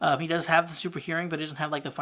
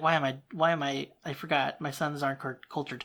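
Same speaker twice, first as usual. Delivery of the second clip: ordinary talk, nothing marked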